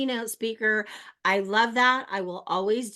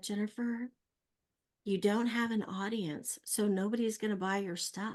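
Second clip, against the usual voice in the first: put-on gentle voice, quieter; 8 dB quieter than usual. Retelling what she was told over dinner: imitating someone speaking gently. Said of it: "she very gently said".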